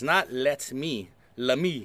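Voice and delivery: very slow, low speech. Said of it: "I'm gonna say this slowly".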